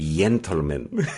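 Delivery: slow, Castilian-style Spanish accent from Spain.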